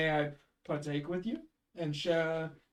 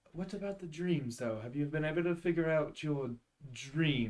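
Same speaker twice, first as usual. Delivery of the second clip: hushed, discreet half-whisper; 4 dB quieter than usual. Leaning over to ask another player privately so one player can't hear, half-whispering. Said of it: "I'm gonna kind of whisper to Belwyn".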